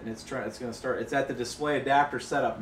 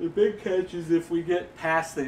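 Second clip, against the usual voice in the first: speech distorted mid-yawn; 5 semitones higher, 4 dB louder than usual. Waiting for a computer to finish booting, yawning while talking. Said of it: "excuse me, I'm yawning".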